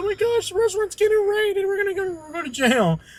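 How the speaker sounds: mock very high, tearful crying voice. Retelling how Katie's mom reacted to cops walking in: imitating a crying mom. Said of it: "crying. She's like".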